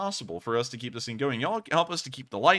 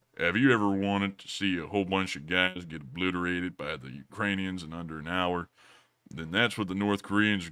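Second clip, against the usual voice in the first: put-on western cowboy voice, lower pitch; 7 semitones lower than usual. Switching to a Sam Elliott impression to answer a viewer's question. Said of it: "We'll do a Sam Elliott instead".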